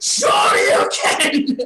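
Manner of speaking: loud battle shout. Running up to land an uppercut on him, a battle shout. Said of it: "runs up to him with this uppercut and shouts".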